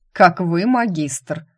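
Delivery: sarcastic, mocking, irreverent, snide tone. Narrator reads a student retorting to his master, snide. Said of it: "ехидно и совершенно без почтения уточнил".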